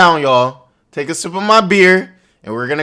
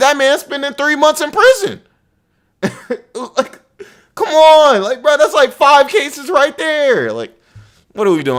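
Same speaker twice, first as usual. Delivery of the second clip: heated, high-pitched, worked-up yelling; 9 semitones higher than usual. Talking to the audience about a man's many cases, yelling, heated. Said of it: "I'm sorry for yelling".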